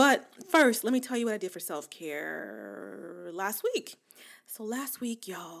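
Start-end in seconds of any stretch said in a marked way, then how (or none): 4.5-5.6 voice deliberately lowered, hushed and quiet. Podcast host to listeners, starting a story about last week, in a lowered voice. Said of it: "I'm lowering my voice".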